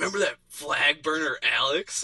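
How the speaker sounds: slow, angry, fed-up, pissed-off delivery. Retelling a phone call from a friend on the drive back: imitating Mike, pissed off. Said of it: "He's pissed".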